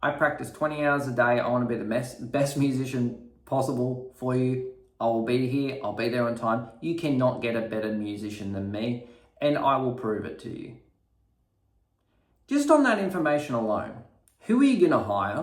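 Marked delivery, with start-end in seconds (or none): none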